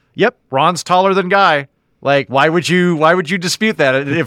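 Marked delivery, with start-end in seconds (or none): 0.2-1.7 put-on matter-of-fact, slightly pitched up. Retelling how the swordsman answers without bragging: imitating a matter-of-fact tone. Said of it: "it's this very matter-of-fact kind of thing".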